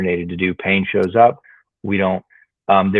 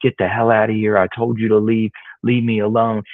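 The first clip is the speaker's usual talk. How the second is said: irritated, fed-up, angry scolding scream; 2 semitones higher than usual. Retelling how a haunted man loses his temper, retelling an angry scream. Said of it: "he starts to raise his voice and scream".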